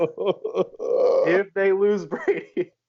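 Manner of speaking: slow delivery, laughing through the words. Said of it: "I'm laughing saying it".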